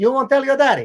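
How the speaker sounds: Italian barber voice. Retelling what a barber said about a haircut: imitating an Italian barber. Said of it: "he was this Italian guy".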